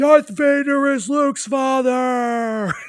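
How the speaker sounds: very high, shrill excited scream, father stretched. Retelling his dad's story of moviegoers running out of the theater, retelling a scream. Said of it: "guys were running out screaming".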